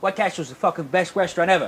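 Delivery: tough, commanding mob boss voice. Quoting a TV character on a restaurant: Tony Soprano impression. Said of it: "or as Tony Soprano say".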